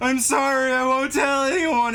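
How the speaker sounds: very high, drawn-out scream. Game master voices a man screaming from across the street, screaming an apology. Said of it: "just screaming".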